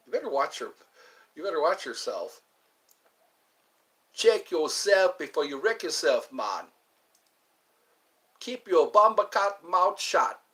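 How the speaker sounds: put-on stern, strict, scolding Jamaican accent. Retelling how the Jamaican nurses at a hospital talked, in a mock-strict Jamaican accent. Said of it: "a lot of Jamaican nurses and they're pretty strict".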